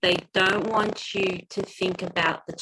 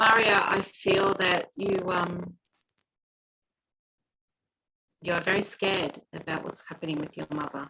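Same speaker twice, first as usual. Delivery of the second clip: slow, deliberate, unhurried, spaced-out phrasing. Speaking to mario so the words can be translated, speaking slowly. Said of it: "I'll say it slowly so that you're able to".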